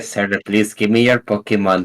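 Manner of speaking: put-on Indian accent. Playing a Pokemon villain demanding someone's Pokemon, in a put-on Indian accent. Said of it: "Just because I can do the accent".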